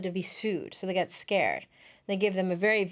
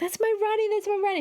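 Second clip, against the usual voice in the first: put-on woman's scream, higher; 13 semitones higher, 3 dB louder than usual. Retelling a woman's outburst over a father's photo: imitating a woman yelling. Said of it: "she starts yelling and screaming".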